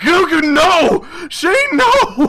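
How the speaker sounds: very high, slow, drawn-out sobbing scream. Storyteller voicing Lei as Shane is torn apart, screaming while crying. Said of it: "Lei screams as he cries".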